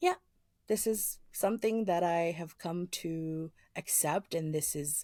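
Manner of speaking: peaceful, accepting tone. Retelling what a friend answered about her parents: imitating a calm, matter-of-fact tone. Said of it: "just matter of fact".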